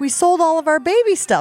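mock anxious, worried blurt. Retelling a man's reaction to news the family is expanding, mock-nervous. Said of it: "Mike gets all nervous because he's like".

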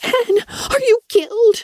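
very high, piercing, shrieking cry. A girl throws herself down beside her limp friend and shrieks. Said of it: "shrieked Anna".

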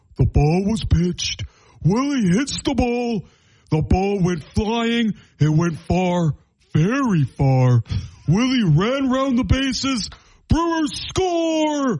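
high, put-on cartoon voice. Speaker tries a Patrick voice after admitting it isn't their best. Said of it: "I don't have the best Patrick voice".

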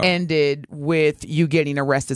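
normal talking voice

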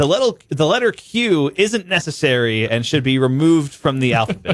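usual speaking voice

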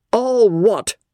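booming, loud, roared delivery. Captain Dobbin cuts off Mrs. Dobbin's remark about Amelia, roared out. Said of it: "Captain Dobbin roared out".

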